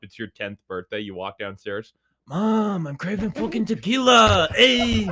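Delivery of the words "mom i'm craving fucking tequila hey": put-on Mexican accent, very high-pitched and very loud. Acting out a ten-year-old who wakes up changed: put-on Mexican accent. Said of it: "your voice changes like that".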